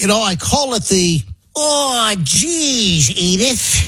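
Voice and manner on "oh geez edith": put-on grumbling sitcom dad voice, higher. Joking about spouses and finances, doing an Archie Bunker voice. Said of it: "it's like the Archie Bunker time frame".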